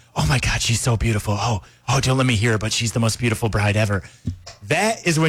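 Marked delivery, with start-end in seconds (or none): 0.2-4.1 performative fake whisper, loud. Explaining wedding etiquette, demonstrating a guest's performative fake whisper as the bride enters. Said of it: "You're supposed to do this fake whisper so the bride can hear it".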